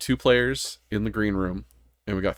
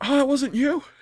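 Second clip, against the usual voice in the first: high, mock realization. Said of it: "and then, like".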